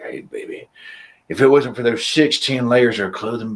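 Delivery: audible stage whisper. Imagining someone saying a line into your ear: pretend half-whispering in your ear. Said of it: "somebody whispering that in your ear".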